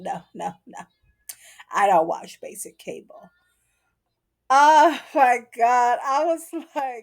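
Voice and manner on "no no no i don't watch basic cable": mock, completely earnest, low, dead-serious deadpan. Retelling a mixologist's answer to Megan: dead serious, imitating Raymond. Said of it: "dead serious".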